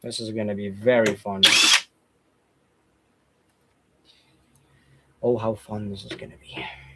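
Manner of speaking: low, sarcastic, fake-excited mock enthusiasm. Taking apart a device held by tiny screws, sarcastic. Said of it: "I'm I'm being sarcastic".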